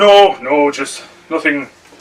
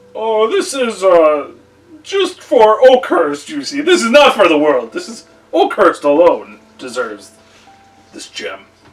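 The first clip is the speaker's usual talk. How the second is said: evasive, shifty voice, high and swooping; 6 semitones higher than usual. The storyteller plays the town mayor answering visiting traders: shifty mayor. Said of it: "He kind of, goes back to being shifty. He's like, / And out from the building comes a man dressed in finer clothes. He's a human, and he's just shaking his head. / And out from the building comes a ma".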